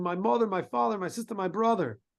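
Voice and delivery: put-on child voice screaming and crying. Telling a story about a crying child pulled back to the line, imitating a child screaming. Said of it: "The cry of a child screaming".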